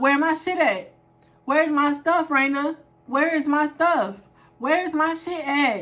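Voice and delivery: play-acted spazzing out, aggressive, badgering, repeated. Retelling a roommate getting in her face over her stuff: imitating someone confronting her. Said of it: "kept getting in my face and she kept coming like".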